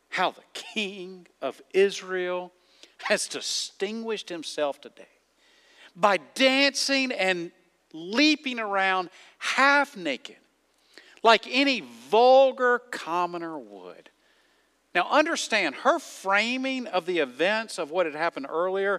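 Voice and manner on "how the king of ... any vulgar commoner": ordinary delivery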